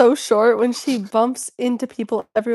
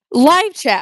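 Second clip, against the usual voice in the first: automated screen-reader voice reading out; 4 semitones higher, 4 dB louder than usual. Retelling what the screen reader says aloud: VoiceOver voice. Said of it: "voiceover will be like".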